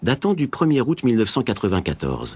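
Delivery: ordinary delivery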